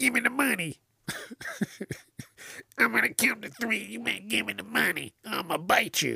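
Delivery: very high, rough, creaky voice. Mocking how crackheads rob stores, imitating a crackhead robber. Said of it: "They always have the same voice".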